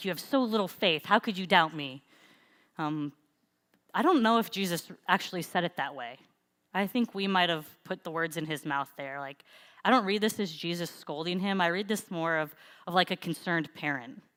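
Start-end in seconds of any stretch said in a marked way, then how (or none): 0.0-2.0 acted, put-on angry tone. Speaker acts out how a verse is often read, mock-angry Jesus scolding. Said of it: "we read it as like Jesus is angry and scolding him".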